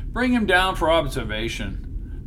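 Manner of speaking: ordinary delivery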